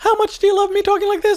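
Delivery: squeaking way up high. Working out a harmony, the speaker switches voices: Mickey Mouse voice. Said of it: "I've turned into Mickey Mouse".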